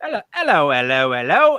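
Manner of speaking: put-on British accent. Describing a British person walking up, in a British voice. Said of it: "the British voice walks up and they're like".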